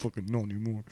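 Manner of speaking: put-on resentful voice. Repeating a remark to show the horrible resentment heard in the voice, mock-resentful. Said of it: "the horrible resentment".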